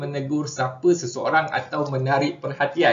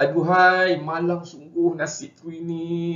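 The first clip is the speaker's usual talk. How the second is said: sad, sorrowful intonation; 3 semitones higher than usual. Example sentence for the interjection 'aduhai', sad intonation. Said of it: "untuk menyatakan perasaan sedih. ... contoh ayat dia dengan intonasi".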